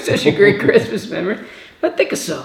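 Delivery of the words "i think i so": put-on whispered, hushed voice with heavy Italian accent. Repeating an uncle's line from a Christmas memory: Uncle Dino impression, thick Italian accent. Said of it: "He's got this thick Italian accent".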